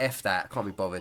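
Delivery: ordinary delivery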